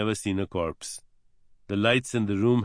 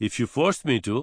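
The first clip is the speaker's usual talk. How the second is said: ordinary delivery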